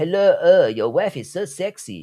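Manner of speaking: very slow, high-pitched, put-on French accent. Imitating Egyptian men addressing the speaker's wife, in a French accent. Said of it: "I'm using a French accent today".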